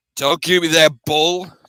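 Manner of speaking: growling, pointed delivery. Narrator reads the line of a man called Astros Cap: growling. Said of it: "Astros Cap growled".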